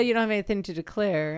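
usual speaking voice

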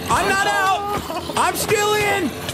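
desperate, shouted delivery.

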